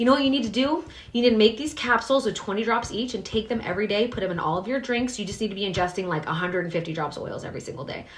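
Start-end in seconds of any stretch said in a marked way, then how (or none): none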